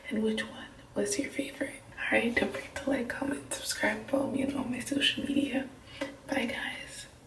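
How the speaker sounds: hushed whisper. Talking to the camera at night while roommates sleep: whispering. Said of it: "so I'm whispering because my roommates are sleeping".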